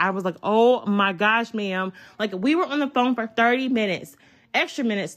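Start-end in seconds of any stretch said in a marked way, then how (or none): 0.4-1.9 mock very slow, drawn-out, annoyed, exasperated tone. Retelling a long phone call with a persistent customer: imitating own annoyed reply. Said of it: "I'm getting annoyed".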